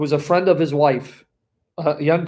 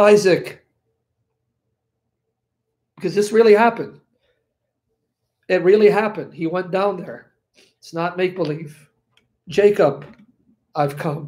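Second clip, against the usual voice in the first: choked up, tearful, holding back tears; 2 semitones higher than usual. Speaking to a group, apologizing for getting emotional, choked up and crying.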